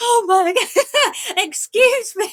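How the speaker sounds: high, drawn-out, near-tears mock voice. Retelling how grown men reacted when their dog recovered: imitating someone bursting into tears. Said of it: "they have burst into tears and they're like".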